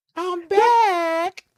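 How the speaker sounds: very high voice with "back" stretched long. Repeating the player's line again after being told not to: imitating Cam. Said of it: "Don't do that".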